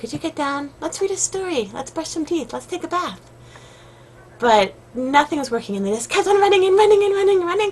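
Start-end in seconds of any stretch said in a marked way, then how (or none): 0.0-3.2 gentle, soft, sweet, quiet, coaxing voice. Retelling speaking to kids running around on the bed, retold sweet, quiet voice. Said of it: "sweet voice, quiet voice".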